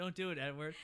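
mock passive-aggressive begging tone. Retelling a movie scene, mocking a character: mock passive-aggressive plea. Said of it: "it's just so passive aggressive".

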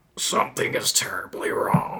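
rough, gravelly, breathy, whispered murmur. Narrator reads a line spoken at Kevin's fortress, in a gravelly murmur. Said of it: "a gravelly voice murmured".

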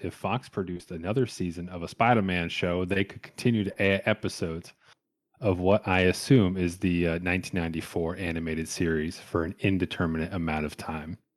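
ordinary talk, nothing marked

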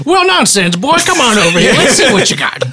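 high cartoon rooster voice. Voicing a character who praises a cannon: Foghorn Leghorn voice. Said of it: "this foghorn leghorn".

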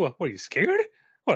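fast, high-pitched mocking surprise, a bit angry. Imagining how the listener's dad reacted during a movie; imitating dad's mocking surprise. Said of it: "Like half surprised, half mocking, a little bit mad".

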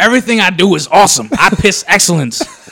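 very high, very loud shrill bragging voice. Imitating J J when the Jazz win: imitating J J. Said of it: "that's exactly what he sounds like".

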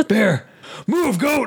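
shrill, very high-pitched acted screaming. A speaker acts out a man passing a bear cave, retelling a scream at a goat. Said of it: "he's screaming at the goat".

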